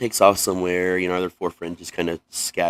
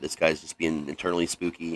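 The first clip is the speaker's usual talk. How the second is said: plain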